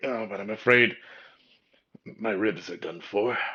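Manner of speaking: loud, pained, wincing delivery. Voicing an injured character getting up with help: wincing in pain. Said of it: "he kinda winces as he".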